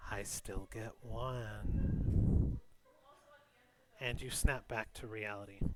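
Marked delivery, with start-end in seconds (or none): 0.1-2.6 put-on old woman voice, dragged out slowly. Narrating a scene to the listener, the storyteller speaks as the hag. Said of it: "And the hag laughs and goes".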